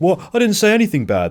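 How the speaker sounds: exaggerated indignant outburst.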